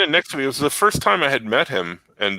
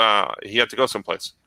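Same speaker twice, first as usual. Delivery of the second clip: low deadpan, flat, giving nothing away; 5 semitones lower than usual. Retelling how Art answered his question about Jimmy the Muscle: imitating Art's deadpan reply. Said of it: "Art looks at me deadpan".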